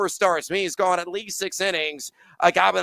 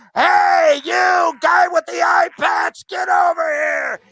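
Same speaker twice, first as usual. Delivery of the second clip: loud, high-pitched fake yelling; 11 semitones higher, 7 dB louder than usual. Pretending to call a friend over across a bar: pretend yelling at a friend. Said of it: "I gotta yell at my friend".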